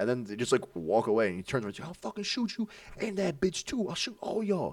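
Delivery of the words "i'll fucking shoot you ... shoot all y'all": put-on shrill menacing scream, pitched very high. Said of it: "he's screaming at me".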